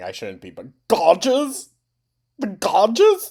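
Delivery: talking through laughter. Reacting to a post the other speaker reads aloud, laughing while talking. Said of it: "I really shouldn't be laughing".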